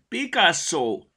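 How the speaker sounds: called out loudly. Mimi, climbing down a swinging rope, calls to Picasso, called out. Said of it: "Kiáltotta".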